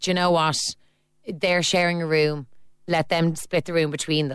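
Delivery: ordinary talk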